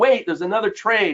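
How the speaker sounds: sudden high yell. Recounting calling out to a skeptical trade room, retelling a big yell. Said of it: "I yelled out in a big voice".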